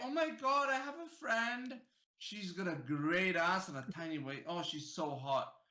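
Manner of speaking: put-on low-pitched, girl-style way of talking. Imitating how a girlfriend would talk about her friend: imitating how a girlfriend talks. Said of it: "she's gonna say it in that way".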